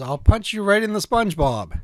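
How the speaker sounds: ordinary delivery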